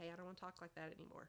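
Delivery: ordinary delivery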